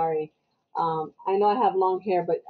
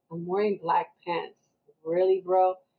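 normal talking voice

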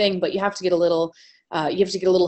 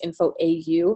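ordinary talk

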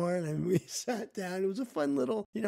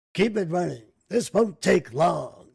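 very loud movie-trailer narrator voice; 8 dB louder than usual. Imagining the man who recorded the trailer telling his driver: Moviefone guy voice. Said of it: "I sound more like the movie phone guy".

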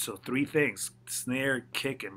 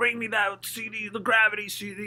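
put-on yell in a much higher pitch; 10 semitones higher, 4 dB louder than usual. Retelling a story of a man calling to his assistant from his office, yelling. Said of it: "And he yells out of his office".

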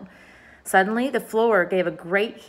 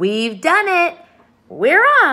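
big swooping shout, loud, high and drawn out; 8 semitones higher, 8 dB louder than usual. The centipede calls down to James and the others, shouting.

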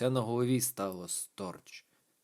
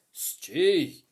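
loud shouted call; 3 semitones higher, 5 dB louder than usual. The sergeant chases a dark figure down the corridor, shouting. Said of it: "вигукнув Гольцингер".

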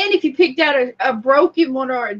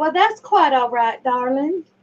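Southern-style delivery. Asked to say it Southern style, speaker tries the line; Southern accent. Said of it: "Why don't you do it Southern style?".

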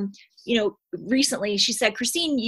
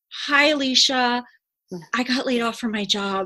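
glum, somber tone, slow. Recalling emailing their coach after being laid off, retelling a somber tone. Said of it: "I was like very somber".

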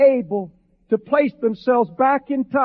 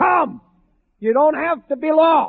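mock screaming at full voice; 4 semitones higher than usual. Speaker recalling a preacher's call in a replayed sermon, retelling a scream. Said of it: "screaming at the top of his voice".

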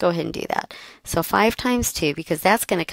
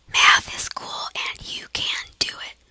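hushed whisper. During a math lesson, the instructor says this whispering.

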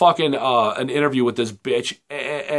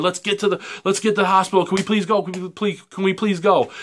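mock hysterical pleading tone, higher; 6 semitones higher than usual. Retelling how a girlfriend begged a cop, imitating hysterical begging. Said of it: "hysterically begging".

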